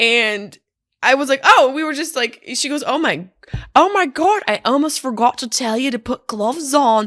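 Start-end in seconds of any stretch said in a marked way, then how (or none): 2.9-7.1 bad fake New Zealand accent drifting toward Irish. Retelling what a woman said about putting gloves on, bad new zealand accent. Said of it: "more like a drunk marionette puppet from Ireland".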